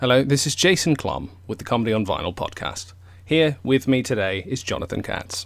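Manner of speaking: British English accent. Asked by the co-host to introduce himself on the podcast, in a British accent. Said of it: "just tell me your name with a British accent".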